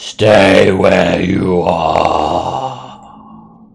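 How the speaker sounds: eerie, rough disembodied yell, very slow and drawn. Voicing a fiend ordering the party to stay: disembodied yell. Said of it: "yells out with a disembodied voice".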